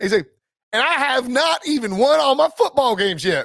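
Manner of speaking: put-on unhurried Southern accent. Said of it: "Any Southerner would say ain't won".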